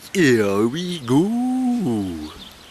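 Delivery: put-on swooping Welsh accent with drawn-out "go". Thanking online well-wishers, then imitating Ralph's Welsh accent. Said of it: "in a Welsh accent".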